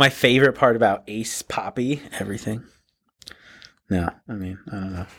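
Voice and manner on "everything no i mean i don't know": quieter, lower-pitched voice. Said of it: "Don't worry about talking lower".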